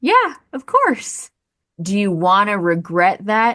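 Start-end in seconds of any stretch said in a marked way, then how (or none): 0.0-1.3 squeaky, very high-pitched voice. Describing someone asked if everything was okay, answering in a high-pitched voice. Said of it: "you in your high-pitched voice said".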